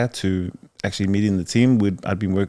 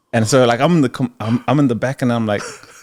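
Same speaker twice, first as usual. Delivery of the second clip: plain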